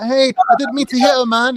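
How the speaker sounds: high-pitched, strung-out, jittery voice. Retelling a film scene, imitating Pookie cracked out.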